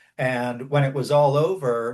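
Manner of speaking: ordinary talk, nothing marked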